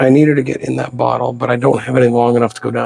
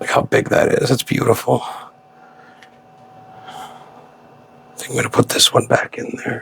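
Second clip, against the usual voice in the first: speaking in a whisper; 4 dB quieter than usual. Putting this one back in there while she watches, whispering. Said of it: "I don't know why I'm whispering".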